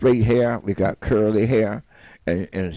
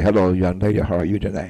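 smooth, charming put-on charmer voice; 2 semitones lower than usual. Showing how a charmer addresses a young lady, smooth Don Casanova voice. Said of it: "See the change in the voice?".

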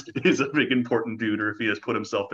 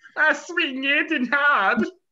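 very high, slow character voice; 3 dB louder than usual. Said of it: "do your Nissa voice".

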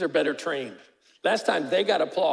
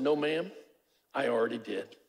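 play-acted very calm, composed, low delivery; 4 semitones lower, 6 dB quieter than usual. Retelling your reply to a woman saying you're taking her daughter; retelling a calm reply. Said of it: "I just very calmly said".

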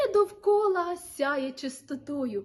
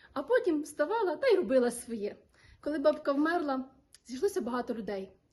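plain

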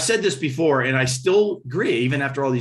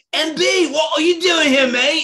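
rough fake British accent, pitched higher; 5 dB louder than usual. Retelling a chance meeting at airport security, fake british accent. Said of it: "I can't do the fake British accent, but I'll do it anyway".

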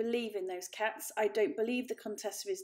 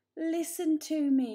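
high, pleading, begging voice; 6 semitones higher, 4 dB louder than usual. The elder Paul answers Aunt Junie, pleading. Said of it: "pleaded the elder Paul".

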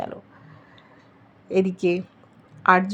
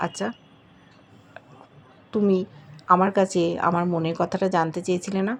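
ordinary delivery

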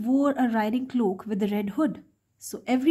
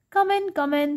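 high, squeaky put-on grandma voice; 5 semitones higher than usual. Reading the wolf, in the grandmother's bed, inviting the girl in, squeaky voice. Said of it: "he said in a squeaky voice".

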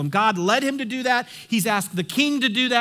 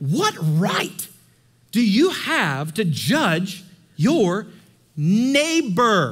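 very slow, swooping, dripping with heavy sarcasm. Reading a verse aloud to the congregation as asked: heavy sarcasm. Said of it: "read that with all the sarcasm you can muster up".

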